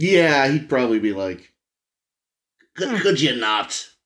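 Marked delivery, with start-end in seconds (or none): 2.8-3.9 put-on villain voice. Imitating the Emperor objecting to his planet's destruction: Emperor impression. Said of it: "your impression of the Emperor".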